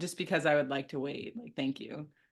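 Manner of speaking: calm, polite delivery. Retelling what they said to a man rushing his timeline, a calm, polite reply. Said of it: "I just like so calmly said".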